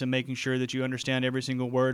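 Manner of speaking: flat robotic monotone on one unchanging note. Showing what talking without pitch changes sounds like: flat monotone pitch. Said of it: "I don't change the pitch at all and ... I'm going to sound like a robot".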